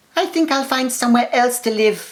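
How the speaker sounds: very high, whiny, complaining voice. Reading a story aloud, voicing the mouse Midas: complaining voice. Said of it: "said Midas in his complaining voice".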